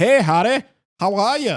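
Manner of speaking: put-on high shout in an Irish or Scottish accent. Mocking how a character sounds in the audiobooks: imitating Tonks's Irish or Scottish accent. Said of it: "a Irish or Scottish accent".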